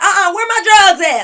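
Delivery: put-on loud talking. Retelling how a girl asked for her drugs out loud, imitating someone talking loudly. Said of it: "she all loud".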